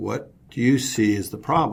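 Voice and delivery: ordinary talk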